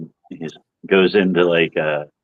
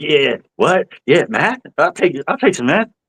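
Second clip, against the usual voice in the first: very high, twitchy, jittery voice; 10 semitones higher than usual. Retelling how cashiers react in a video: imitating a tweaky person. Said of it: "they get all, like, fucking tweaky".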